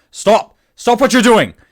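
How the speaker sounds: shouting, yelling. Voicing guards rushing up the stairs with swords: guards shouting commands. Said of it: "they brandish their swords and they go".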